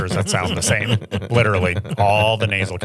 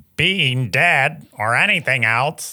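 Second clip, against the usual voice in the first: high cartoon character voice; 5 semitones higher than usual. Repeating a clip's line to mimic it: mimicking Squidward. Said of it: "Say that".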